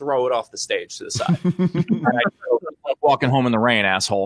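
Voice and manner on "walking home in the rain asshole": usual speaking voice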